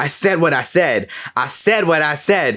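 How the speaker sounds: mock half-voiced mild yell, said twice. Retelling a worker at the food window yelling to the other side, imitating yelling. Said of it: "she's just like yelling towards the other side".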